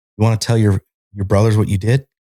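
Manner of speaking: acted-out yelling. Retelling a sergeant addressing him before the whole company, retelling a sergeant's yelling. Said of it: "he's yelling".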